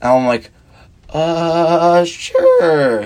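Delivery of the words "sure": swooping put-on voice with stretched-out, drawn-out uh. Retelling answering a woman who asked for his number: imitating his own past words in a changed voice. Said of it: "Nick changes his voice throughout the fucking story".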